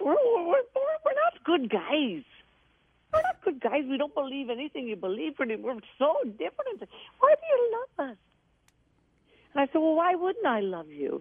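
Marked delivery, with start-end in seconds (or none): 0.0-8.2 put-on brogue, much higher, slower. Speaker retelling what a man said to him, imitating the man's brogue. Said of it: "I'll try to do his brogue".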